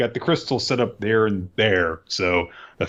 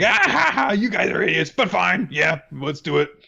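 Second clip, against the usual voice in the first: mock laughing through the words, pitched up; 8 semitones higher than usual. Retelling a scene where a character starts laughing: imitating a character laughing while talking. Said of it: "just starts laughing".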